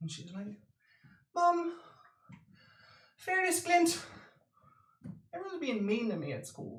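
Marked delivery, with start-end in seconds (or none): 1.3-6.8 put-on very high, crying, tearful little girl voice. Voicing a five-year-old gnome sister who runs in: tearful young gnome girl. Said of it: "she runs in in tears".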